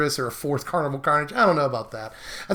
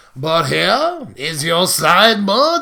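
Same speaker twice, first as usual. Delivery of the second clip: very slow, loud, terrible fake French accent; 4 semitones higher, 7 dB louder than usual. Introducing the sideboard, the speaker slips into a terrible french accent. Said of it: "it's terrible French accent".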